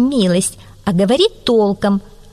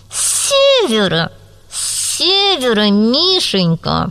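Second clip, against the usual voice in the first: jaw clenched tight, through gritted teeth. A narrator reads the fox answering the bear; through clenched teeth. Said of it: "сквозь зубы процедила".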